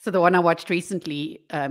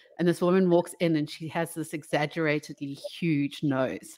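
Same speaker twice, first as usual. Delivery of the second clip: ordinary talk, nothing marked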